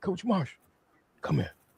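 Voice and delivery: calm, gentle, soft little voice, unhurried. Recounting a man calling the speaker over after a ball hit him: retelling a calm little voice. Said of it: "out of that calm little voice".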